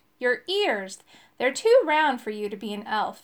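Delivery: ordinary delivery, nothing marked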